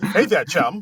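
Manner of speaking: loud, snappy, clipped 1940s-style reporter patter. Joining in on an actress's clipped 1940s delivery, imitating it. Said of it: "that clip nineteen forties delivery".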